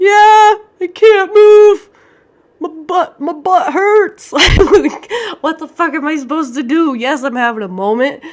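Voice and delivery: play-acted very loud, high-pitched, tearful crying outburst. Speaker retells answering a woman who asked if she was having a moment, retelling own crying. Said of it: "And I'm just like crying".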